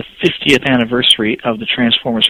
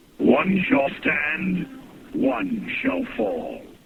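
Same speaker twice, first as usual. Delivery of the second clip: put-on heroic robot voice, higher and quieter; 7 semitones higher, 9 dB quieter than usual. Voicing a household robot that talks in Peter Cullen's voice: Peter Cullen's voice. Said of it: "he talks in Peter Cullen's voice".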